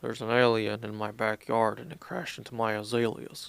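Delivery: put-on movie-star American accent. Quoting a line from the movie Jules: Ben Kingsley's American accent. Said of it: "It's just Ben Kingsley America, like, his American accent".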